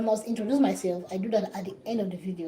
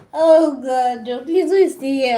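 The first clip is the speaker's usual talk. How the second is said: high, loud talking broken up by laughter; 6 semitones higher, 12 dB louder than usual. Returning to the live stream after a break, laughing while talking. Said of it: "I'm laughing out loud".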